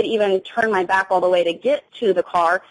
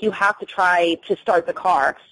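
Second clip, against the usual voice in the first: ordinary talk, nothing marked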